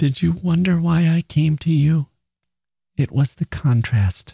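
high, hushed, full stage whisper. From her bed, a woman speaks to the narrator, half-whispered. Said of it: "Later she whispered".

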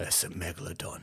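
hushed, breathy, quiet tough-guy voice in a whisper. Retelling a movie scene with the diver's line: Jason Statham voice. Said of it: "in his Jason Statham voice goes".

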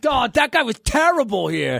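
loud, clumsy, bad put-on Boston accent. Imitating someone reacting to the team bringing back Morton, in a bad Boston accent. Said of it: "I don't know why you did a Boston accent".

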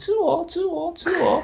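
tiny, piercing, shrill, very high squeaky voice. Describing tiny creatures jumping around and begging to be eaten, shrill squeaky voice. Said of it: "用尖锐的声音说".

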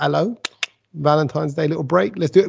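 ordinary delivery

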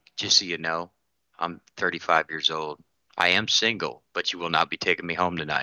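soft, hushed stage half-whisper. Retelling what she half-whispered in his ear at the range: imitating a half-whisper. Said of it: "she reaches up and whispers".

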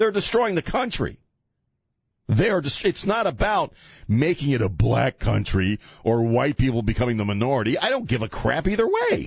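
upset, high and swinging pitch. Talking to Chris, getting upset as the voice goes high. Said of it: "because my voice is getting high".

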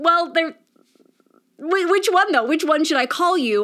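high, pressing, confused voice.

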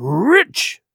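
heated, insistent tone. Reading a story aloud, a castaway insisting on his claim: heated. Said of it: "he repeated the statement hotly".

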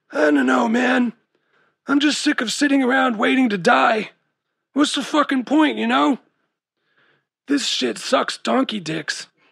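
raspy, rough, slightly high voice. Reading a story, Chad answers Amber's question: raspy voice. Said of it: "he said in a raspy voice".

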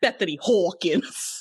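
mock New Jersey accent. Imitating how Kim says a full name: imitating Kim's Jersey accent. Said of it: "that's my Jersey accent".

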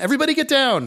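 play-acted, very high, shrill barked yell. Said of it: "Sean yells again".

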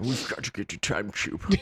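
put-on light, mild Scottish accent. Repeating a line from an old episode: Sean Connery voice. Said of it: "it was Connery".

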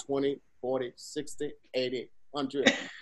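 silly, breathy put-on voice. Describing a man on camera counting money: put-on voice for a man counting. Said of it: "Why'd you give him that voice?".

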